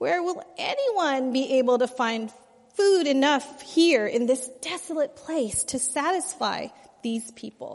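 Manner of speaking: mock whiny sarcastic voice. Speaker acts out a group's reply to Jesus from Mark 8:4, mock whiny, sarcastic, weary. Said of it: "I imagine they say this in almost a whiny, sarcastic, weary voice".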